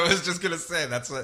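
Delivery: plain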